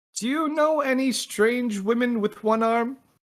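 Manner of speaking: very high, loud yell from far off. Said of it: "someone yelling down the tunnel behind you".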